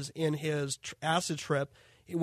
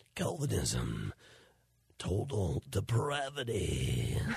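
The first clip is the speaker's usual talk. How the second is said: very deep, swooping epic movie-trailer narrator voice; 9 semitones lower, 5 dB quieter than usual. Asked to do a movie guy voice about Calvinism, the speaker obliges in a movie guy voice. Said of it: "Do a movie guy voice".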